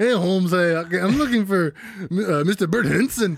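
put-on fake Spanish-accented English. Retelling a movie scene where a ransom call is faked in a weird accent. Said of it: "they're doing this weird accent".

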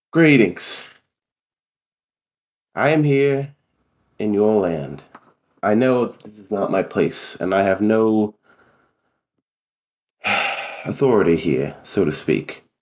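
calm, gentle, composed, polite tone. A player's character approaches people harassing a young girl, calm greeting. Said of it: "uncharacteristically calmly approach them".

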